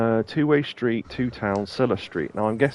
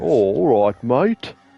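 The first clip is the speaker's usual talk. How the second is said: Australian voice straining at posh English, raised, slow; 6 dB louder than usual. Mocking a game character's voice: imitating Aussie faking posh English. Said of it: "trying to sound really posh English, but don't quite know how".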